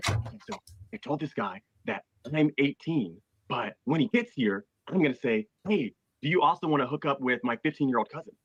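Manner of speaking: secretive stage whisper. Retelling what the lead decoy said away from the cameras: imitating someone half-whispering. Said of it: "he whispers, he's like".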